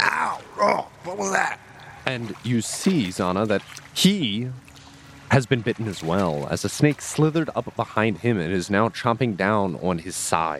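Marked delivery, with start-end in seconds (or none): 0.0-1.6 shrill, very high, pained scream. Game narrator voicing a character just bitten by a snake: screaming out in pain. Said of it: "Draken actually screams out in pain".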